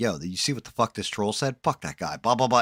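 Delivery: heated, angry, worked-up tirade. Acting out a streamer who rages about a troll: imitating someone ranting angrily. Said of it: "and started going off".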